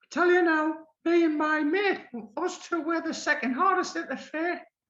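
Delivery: very high squeaky voice.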